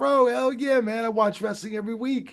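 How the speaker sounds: very high voice. A wrestling referee retells Mike Tyson's answer on meeting him, in a high-pitched Mike Tyson voice. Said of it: "he had this like real pitch voice".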